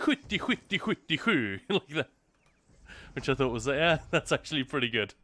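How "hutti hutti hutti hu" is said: high-pitched, slow, fake Swedish-sounding babble. Retelling how she imitated Swedish when someone said Sweden, in mock Swedish gibberish. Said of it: "she just went".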